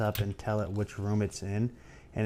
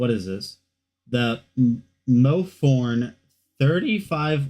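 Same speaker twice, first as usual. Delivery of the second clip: voice cracking, much slower; 3 semitones higher, 11 dB louder than usual. Presenting the next item in a product rundown, voice cracking. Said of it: "my voice just cracked".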